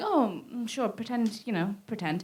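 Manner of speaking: soft, awkward muttering to self.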